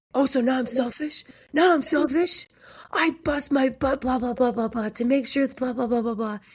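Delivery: pissed-off high ranting outburst. Retelling what the other person said when he got angry: imitating an angry husband. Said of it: "he got so pissed at me".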